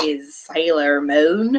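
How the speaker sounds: slight Texas accent, voice dropped low. A host names an upcoming release, sounding kind of Texas. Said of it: "I totally sound Texas, kind of, when I say that".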